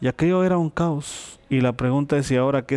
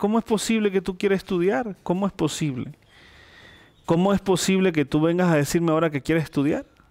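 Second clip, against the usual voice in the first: mock weeping, tearful, anguished, disbelieving voice; 4 semitones higher than usual. Retelling his mother's reply when he says he wants to study: imitating his mother crying. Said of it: "mi mamá llora y dice".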